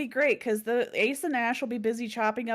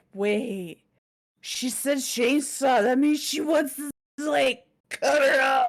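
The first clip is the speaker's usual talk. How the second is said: mock drunk voice, higher and louder; 4 semitones higher, 5 dB louder than usual. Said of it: "They're just so fucking drunk".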